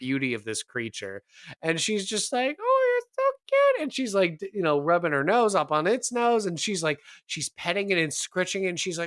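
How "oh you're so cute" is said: very high, loud, tearful, overwhelmed weepy voice. Retelling a party member fawning over a creature, mock-weepy high pitch. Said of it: "she's like going like weepy high pitch".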